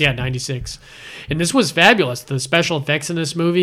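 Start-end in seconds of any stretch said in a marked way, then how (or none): none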